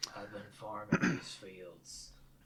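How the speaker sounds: deep, low, gruff character voice. Introducing a character's casting, demonstrating the deep, gruff voice. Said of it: "somebody who could do that gr- deep, gruff voice".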